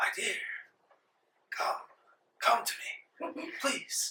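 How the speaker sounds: soft, breathy, whispered dying plea. Narrator voices Rawl, carried past on a stretcher, calling to a player: dying man's plea. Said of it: "a dying man's wish".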